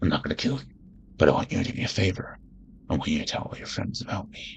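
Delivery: hushed, close, breathy whisper. Comparing live-action Batman versions, doing the eighty-nine movie one: Batman impression. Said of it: "in the eighty-nine movie where he's like".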